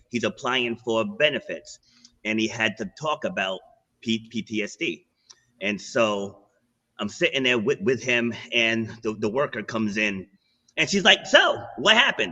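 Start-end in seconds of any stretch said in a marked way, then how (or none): 11.2-12.3 put-on breezy, very high, nonchalant, offhand tone. Retelling how a worker asked a question, imitating someone asking nonchalantly. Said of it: "All just, like, nonchalantly".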